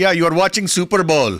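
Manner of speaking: put-on high-pitched Indian accent. Quoting how their parents talk, imitating the parents' indian accent. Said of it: "with their Indian accent".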